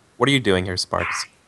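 sly, coy, knowing teasing tone. Voicing a rabbit greeting an old flame: coy. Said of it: "a coy kinda way".

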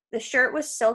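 plain

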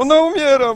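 high, loud, panicked yelling.

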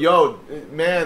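normal talking voice

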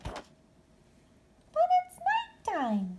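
tiny, very high squeaky voice. Narrator voicing a bat replying to Mother Bat, squeaking. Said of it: "she squeaked".

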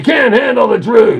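loud scream.

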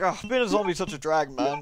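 ordinary talk, nothing marked

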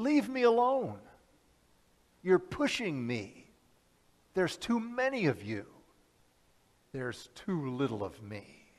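high-pitched cry, calling out. Speaker retells a scene, voicing the line Jesus calls out: Jesus's high-pitched cry, retold. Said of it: "in kind of a high-pitched, you know, cry".

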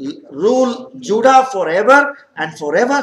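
usual speaking voice

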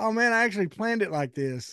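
high, mock-proud, joking sarcastic tone.

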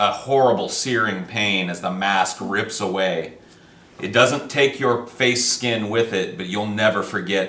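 ordinary delivery

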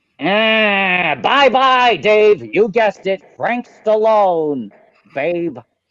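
exaggerated with extra attitude. Recording a second take of a goodbye bumper: exaggerated with extra stank. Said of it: "really put some stank on this".

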